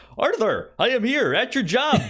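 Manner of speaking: put-on superhero voice. Retelling a scene where the Tick visits Arthur at work: Tick voice. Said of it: "the Tick being like".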